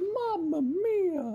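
very high cartoon voice with mia drawn out. Retelling how he went before he died, in Mario voice. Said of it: "in the voice of Mario from Super Mario sixty-four".

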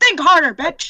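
very loud, shrill, bullying screech. In character, ordering another character to think harder: screaming in character. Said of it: "the person currently screaming at him to, um, think harder".

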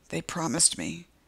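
broken, devastated, hushed half-whisper. A woman on the porch speaks as help is called, half-whispered. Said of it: "she whispers".

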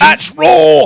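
shrill, bellowing, very high scream at full volume. Asked to do Gordon Ramsay, the speaker tries out a line in a Gordon Ramsay impression. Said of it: "Where is he goes".

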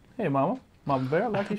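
little touch of put-on Cajun accent, soft. Player greets mama bear after being told to add cajun flavor: cajun accent. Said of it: "you got to put a little Cajun flavor on it".

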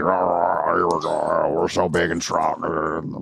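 very slow, creaky, rough macho tough-guy voice. Describing how guys act when they play, macho man impression. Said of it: "that's my impression of men".

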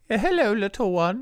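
high put-on British fairy-godmother voice. Imitating a fairy godmother from a magical Disney movie: British fairy godmother voice. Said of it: "The godmother is British".

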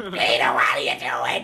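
slow voice like a heavy smoker. Voicing a character calling peter: voice like a smoker. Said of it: "I sound like I smoke or something".

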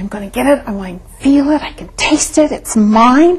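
eager, fired-up, greatly enthusiastic tone. Demonstrating how to declare you will get what you want: great enthusiasm. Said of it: "I want to do it with great enthusiasm".

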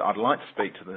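put-on half-sarcastic tone. Retelling what a doubtful lady finally said: imitating a half-sarcastic tone. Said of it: "almost half sarcastic tone".

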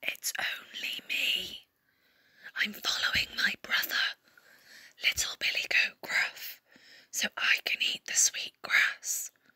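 softest voice, almost whispered. Narrating a fairy tale, the middle-sized goat answers the troll in his softest voice. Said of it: "managed to say in his softest voice".

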